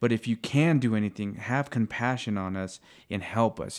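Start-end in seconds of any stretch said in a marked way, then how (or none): none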